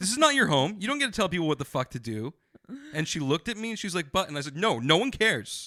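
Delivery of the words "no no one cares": imitated loud voice, higher and louder. Retelling telling off a rude lady: retelling own loud line. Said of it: "I was loud".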